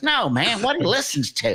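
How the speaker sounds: put-on Southern accent. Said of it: "Curtis has this Southern accent".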